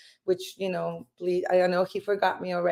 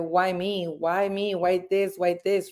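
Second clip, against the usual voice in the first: ordinary talk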